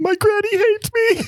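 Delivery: fake sobbing, pitched very high. Retelling forcing tears when he comes back, retelling fake crying. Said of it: "so then I start crying".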